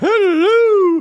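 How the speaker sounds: hello stretched out, very high, shrill and loud. Greeting the listeners at the show's start: Mrs. Doubtfire voice. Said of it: "That was my Missus Doubtfire impersonation".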